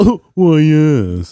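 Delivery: snooty posh announcer voice. Answering a call for a snobby announcer: snobby announcer voice. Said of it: "we just need a really snobby announcer".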